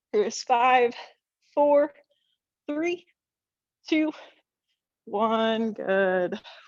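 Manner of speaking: voice with a slight shake. Workout instructor counting down the last seconds of a hold, slight shake in voice. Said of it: "You can hear a little shake in my voice there".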